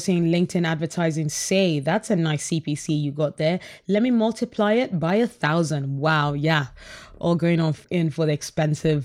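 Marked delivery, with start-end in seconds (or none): none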